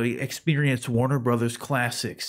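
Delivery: movie trailer announcer voice. Acting out an imagined streaming ad: movie trailer voice. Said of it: "the movie trailer voice guy come over".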